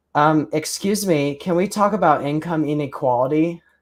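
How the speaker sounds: high, effeminate man voice. In an improv game, the speaker plays a character raising a question: really effeminate male voice. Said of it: "I'm just gonna do like a really effeminate male voice".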